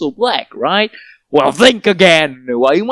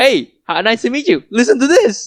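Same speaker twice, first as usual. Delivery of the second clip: put-on annoying pushy salesy voice, higher; 7 semitones higher than usual. Retelling how they push the podcast on strangers: imitating own annoying pitch. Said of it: "I'm probably the annoying guy that way".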